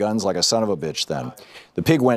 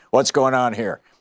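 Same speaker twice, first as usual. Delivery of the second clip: put-on hoggish, intimidating, menacing voice; 3 semitones higher than usual. Retelling what someone said through the car window, imitating a hoggish intimidating voice. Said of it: "with a hoggish voice trying to sound intimidating".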